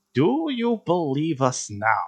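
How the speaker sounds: soft, slow, craggly hag's voice. Game master voices the being after Taban's voice disappears, in a craggly voice. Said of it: "the craggly voice comes back".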